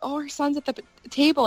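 mock flustered voice, high-pitched and fluttery. Recounting a breakfast with the Mad Hatter, retelling being flustered. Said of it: "I was getting all flustered".

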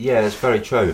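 talking through a mouthful. Asked about markets while eating chocolate, talking with a mouth full. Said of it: "Excuse me, I've got a mouthful of".

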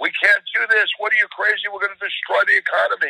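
play-acted high-pitched shrieking, screaming objection. Imitating people who disagree with the speaker: imitating people screaming. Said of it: "a lot of people who are screaming".

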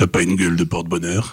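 put-on booming voice. Retelling how a bank clerk said a line on the phone: imitating a big booming voice. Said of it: "il a fait avec sa grosse voix".

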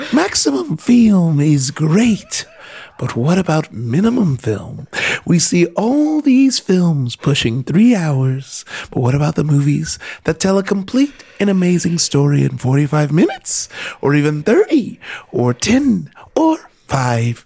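sweet, tiny, cute fairy-like voice. Reading a listener's question aloud at a co-host's request, in a cute little fairy voice. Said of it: "reading this in a cute little fairy voice would rock my world".

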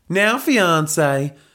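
lazy southern Texan drawl. Reading a story aloud, the narrator voices Helga addressing Belinda's fiancé, southern Texan drawl. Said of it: "drawled Helga in her southern Texan accent".

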